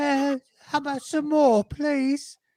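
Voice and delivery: over-the-top English accent, pitched very high. Acting out asking a wife for seconds of food: exaggerated English accent. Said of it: "That's a better English impression than me".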